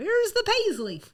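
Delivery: put-on southern accent, pitched high. Quoting a line for a shirt, in a put-on Southern accent. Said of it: "Did that sound nice and Southern?".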